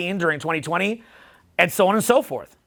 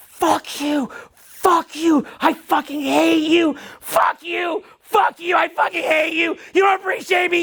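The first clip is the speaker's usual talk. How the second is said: acted, very high, slow, drawn-out frenzied scream; 10 semitones higher than usual. Retelling how the mother of his kids suddenly started screaming: imitating someone screaming. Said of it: "she started fucking screaming".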